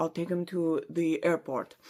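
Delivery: put-on Russian accent. Recapping a story, Rozanov speaks on the phone: done in Rozanov's accent. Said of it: "I don't know why I did the accent".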